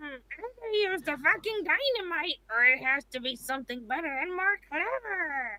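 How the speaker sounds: sounds like a witch. Speaker voices her character while playing with others, in a witchy voice. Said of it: "I just sound like a witch now".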